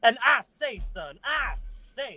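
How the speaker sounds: exaggerated high Southern drawl. Mid-roleplay, a player slips into a Foghorn Leghorn voice. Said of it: "like you're doing like Southern Lightning McQueen".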